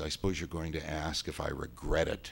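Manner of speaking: ordinary talk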